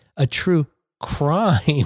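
wry, ironic tone with audible quote marks. Saying it without the gesture to see if it's heard: ironic air-quote tone. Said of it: "I'm not going to do the gesture now, see if you can still hear it".

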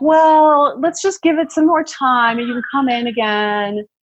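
high, breezy, unbothered lackadaisical doctor voice. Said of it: "kind of very, like, lackadaisical about it".

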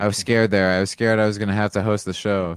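ordinary delivery

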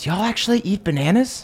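sly, voiced stage whisper, in character. Half-whispering a question to a nearby Zard during a tense gathering: half-whispering in character. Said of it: "I whisper to, uh, one of the Zards nearby".

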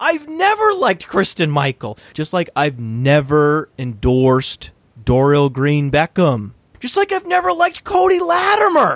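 high, shouted, frantic rant. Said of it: "here's me losing my mind".

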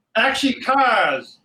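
film director's call, on-set style. Retelling a yell at a film crew: retelling his own yell. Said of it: "and I yell".

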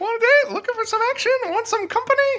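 very high, straining, strained put-on squeak. Retelling the first thing she says, in a high-pitched put-on voice. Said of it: "It takes a lot for me to hit those high notes".

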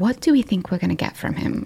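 hushed whisper in a put-on voice. Voicing a character whispering to companions about a captive: whispering in character. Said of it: "I think I kinda whispered to them".

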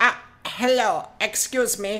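slow, loud, creepy put-on German accent. Imitating the creepy Germans out there: imitating a creepy German. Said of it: "all those creepy Germans out there, like".

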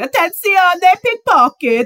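mock piercing shriek, very high and shrill. Imagining an older Italian lady in Venice: imitating Monica Poli screaming. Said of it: "some older Italian lady's just screaming".

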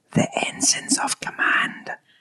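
playful, secretive stage whisper. Secretly passing another speaker the answer they should give: playful stage whisper. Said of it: "I'll whisper it to you".

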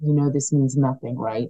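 put-on whisper. Retelling what the federation director whispered at the medal ceremony: imitating a whisper.

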